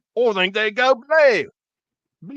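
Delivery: put-on Australian accent. Speaker tries out an accent for the others, in an attempted australian accent. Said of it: "I'm trying to do an Australian accent".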